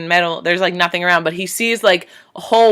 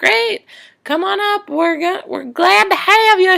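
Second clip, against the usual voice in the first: put-on country accent, much higher, slower; 13 semitones higher than usual. Recounting the recording lady welcoming a survivor up, in a country accent. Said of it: "She has like this country accent".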